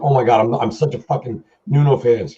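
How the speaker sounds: put-on shaky, trembling, nervous voice. Retelling meeting a guitar tech as a teenage fan, imitating past self shaking. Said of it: "I'm like shaking".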